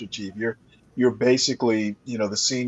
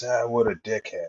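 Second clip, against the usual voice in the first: grumbling mutter under the breath. Retelling what a sailor said during a drill: imitating a muttered remark. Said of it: "basically under his breath goes".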